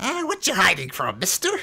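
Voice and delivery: high, small goblin creature voice. Narrating a street scene, voicing a little goblin who comes up: goblin voice. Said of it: "this little goblin comes up and says".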